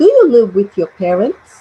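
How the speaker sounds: pitch lifting at the end on "parents". English lesson in portuguese on yes-no questions, rising intonation at the end. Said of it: "yes or no questions have a rising intonation at the end".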